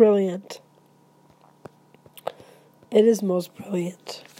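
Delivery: emotional, choked up, breaking and catching voice. Reacting to a Hanukkah reading for viewers, choked up. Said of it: "I got choked up there".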